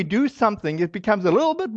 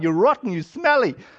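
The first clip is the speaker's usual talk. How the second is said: normal talking voice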